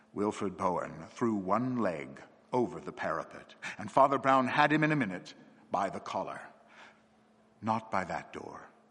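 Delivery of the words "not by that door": quite gentle, kindly, mild. Grabbing a man by the collar at the parapet, he speaks quite gently. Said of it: "he said quite gently".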